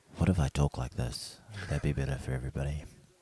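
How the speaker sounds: put-on porn-style voice. Joking about talking differently on a stream: put-on porno voice. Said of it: "that's my porno voice".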